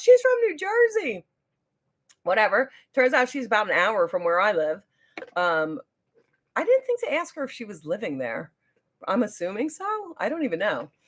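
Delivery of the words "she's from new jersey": very high, excited, loud yell. Retelling a shop worker calling out to somebody else: imitating someone yelling. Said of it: "yelled to somebody else".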